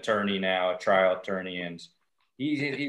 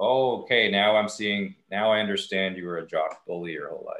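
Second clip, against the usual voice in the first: usual speaking voice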